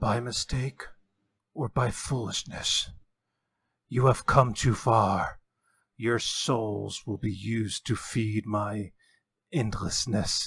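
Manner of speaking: carrying stage whisper. A game master voices a mysterious whispering sound heard by the party, whispering. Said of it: "This whispering sound".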